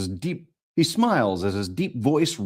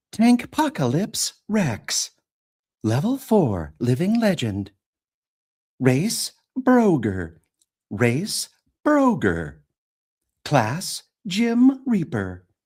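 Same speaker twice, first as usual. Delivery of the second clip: slow, standard, neuter computer voice; 6 semitones higher than usual. Reading a character intro card aloud: standard neuter computer voice. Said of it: "we do standard neuter computer voice for".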